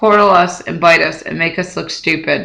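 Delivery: ordinary delivery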